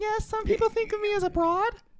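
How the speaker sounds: put-on very high-pitched girly voice.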